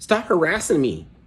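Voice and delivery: very high put-on nerd voice. Retelling being harassed, speaker switches to his nerdy side; nerdy voice. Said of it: "like in a in a fucking Poindexter voice".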